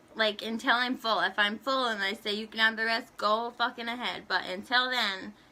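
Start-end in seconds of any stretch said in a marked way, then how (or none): none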